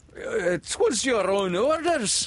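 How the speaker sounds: halting, shrill, high, slow, drawn-out faltering voice. Narrating the bosun's answer to the captain, faltering. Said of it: "the bosun faltered".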